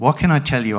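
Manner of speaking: plain reading voice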